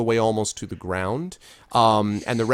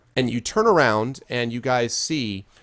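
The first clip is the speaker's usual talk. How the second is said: ordinary delivery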